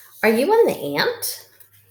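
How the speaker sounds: pitch rising at the end on "ant". Reading practice sentences aloud, marking the question mark with a raised pitch. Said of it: "See how I raised my voice up".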